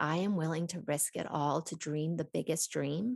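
ordinary talk

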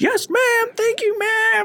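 shrill, very high scream at full volume. Telling a story about a kid in a food line, the speaker imitates his screaming. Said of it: "screaming at the top of his lungs".

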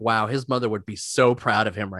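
normal talking voice

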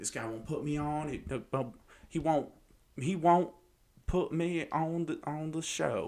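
put-on country accent. Retelling what a man said about a showrunner, doing a country accent. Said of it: "That's my country accent".

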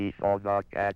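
flat, monotonous, synthetic computer-like voice. A computer says the sample sentence in a flat monotonous computer voice. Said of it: "The flat, monotonous tones of the computer".

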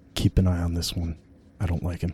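whispering. Voicing a character who warns a companion about someone: whisper. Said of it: "he'll just kinda whisper in Adam's ear".

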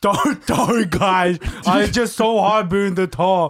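put-on Northern Irish accent, fully committed. Joking about a tall actor apologizing to the crew: imitating a Northern Irish accent. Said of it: "To do a Northern Irish accent, but you nailed it".

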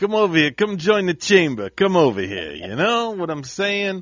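put-on New York accent. Mid-bit, the speaker invites folks over in a put-on new york accent. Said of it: "That's New York".

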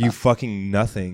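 mock flat, humorless voice. Retelling an insult said to him after his first joke: imitating a humorless, deadpan insult. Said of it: "I didn't say it with any humor in my voice".

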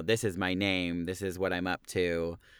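normal talking voice

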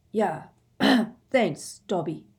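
voice gone thick, heavy and choked-up. Prompted to speak, he clears his throat and gives his thanks in a thick voice. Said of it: "said in a thick voice".

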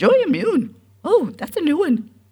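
sing-song, very high, loud, swooping Scottish brogue. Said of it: "much sexier in her Scottish brogue".

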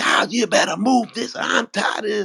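exasperated, shrill, very high, fed-up scolding yell. Retelling coming home stressed and yelling at the kids: imitating own past yelling. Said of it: "one time I was yelling".

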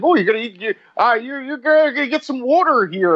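put-on Philadelphia accent. Retelling a wrestler who takes the mic: Nate Hatred impression, thick Philadelphia accent. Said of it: "he has the thickest Philadelphia accent".

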